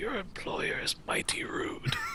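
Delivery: very hushed whisper. Voicing an old traveler leaning toward Nina: whispering. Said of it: "and whispers".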